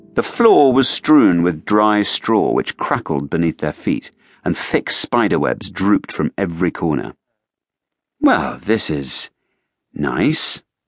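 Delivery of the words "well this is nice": very slow, unsure, doubtful delivery. A companion entering a gloomy, cobwebbed stable remarks on it, uncertain. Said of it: "said Rory uncertainly".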